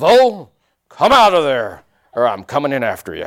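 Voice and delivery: growled out loud, gruff voice. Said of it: "in the best John Wayne voice I can find".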